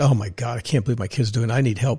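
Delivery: mock terrified voice. Quoting a terrified mother whose kid was arrested: imitating a terrified mother. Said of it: "she's, like, terrified".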